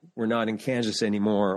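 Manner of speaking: ordinary talk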